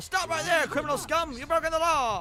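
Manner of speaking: very high, loud yelling shout. Wishing a guard would turn a corner and yell: guard yelling. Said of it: "have a guard yell".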